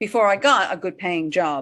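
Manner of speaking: "job" with falling pitch, no rise. Coaching how to end a sentence, falling pitch on "job". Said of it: "Don't go up on job. Come down".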